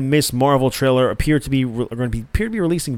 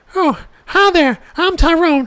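very high, slow comic voice; 4 dB louder than usual. Comparing news cravings to a comedy sketch addict: Tyrone Biggums voice. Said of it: "I'm like Tyrone Biggums".

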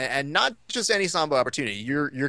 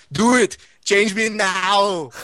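higher, louder put-on Austrian baby voice; 6 semitones higher, 5 dB louder than usual. Retelling a comedian's riff on Schwarzenegger as a baby: Bill Hader's baby Schwarzenegger. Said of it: "Bill Hader's amazing at impressions".

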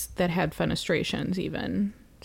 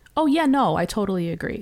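put-on Midwestern accent; 4 dB louder than usual. Describing a meme about how Midwesterners talk, quoting them in a Midwestern accent. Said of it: "how all Midwesterns talk".

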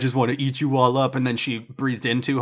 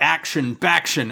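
announcer voice, fumbling and splitting a word; 3 semitones higher than usual. Imitating the arena announcer who always gets the name wrong: imitating announcer botching a name. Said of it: "The P A announcer's always fucking it up".

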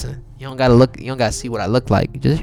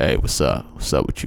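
put-on grumpy-guy voice; 11 semitones lower, 3 dB quieter than usual. Describing the voice expected of him: grumpy dude voice. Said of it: "I'm supposed to sound like a grumpy dude, like".

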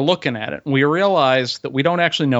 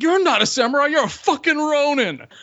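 mock very high, shrill drunken screaming; 13 semitones higher than usual. Retelling being really drunk, speaker re-enacts screaming at him: retelling own drunk screaming. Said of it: "I'm screaming at him".

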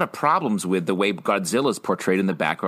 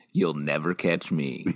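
theatrical delivery, lower; 4 semitones lower, 4 dB quieter than usual. Quoting a line from an old TV sketch: dramatic reading. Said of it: "what a dramatic reading of that line".

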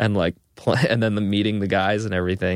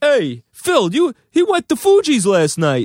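put-on overdone Italian accent, very high; 6 dB louder than usual. Retelling what the guys at work said: terrible Italian stereotype accent. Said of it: "I'm doing, like, a terrible Italian stereotype".

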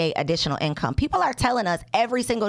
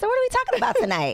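real nice, sweet, very high voice. Retelling a woman pulling her aside with a question, imitating her real nice voice. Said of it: "She said it in a real nice voice".

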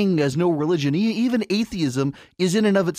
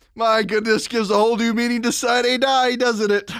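speaking through laughter; 4 semitones higher than usual. Commentator reacting to an argument about voting men, laughing while talking. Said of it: "I'm still laughing about this".

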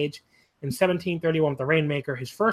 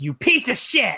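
high yell at the top of the lungs; 5 semitones higher, 4 dB louder than usual. Retelling a wrestler screaming at his opponent: imitating someone yelling at the top of his lungs. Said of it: "at the top of his lungs".

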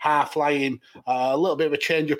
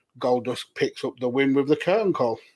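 normal talking voice

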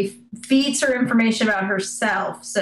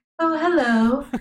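mock creepy teacher voice, higher; 4 semitones higher than usual. Retelling a story's scene, inviting a child inside: imitating a creepy school teacher. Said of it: "a creepy school teacher".

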